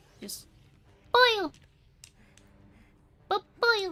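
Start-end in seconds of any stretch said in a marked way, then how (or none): 1.2-3.9 very high, loud put-on creature voice. Showing an impression done for years: Kirby voice. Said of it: "I can do a good Kirby".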